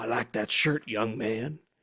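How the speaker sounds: put-on deep, lawyerly voice with a Southern accent. Retelling what a man said to him in an elevator, imitating a southern lawyer. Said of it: "he's like a Southern lawyer".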